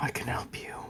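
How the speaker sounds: high whisper, close to the ear. Retelling what he whispers right into your ear, only for you: whispering. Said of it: "And he whispers just to you".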